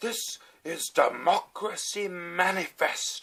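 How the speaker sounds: shrill, very high, very slow stretched-out yell. Recounting a video of a man being dragged out of a restaurant, imitating a man yelling. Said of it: "one of the first things he yells is".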